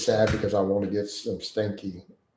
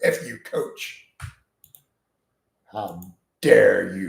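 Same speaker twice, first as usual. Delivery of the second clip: very slow, drawn-out, acted angry outburst. Speaker acts out how a man will react to his coach, imitating someone angry. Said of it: "He's going to get all pissed now".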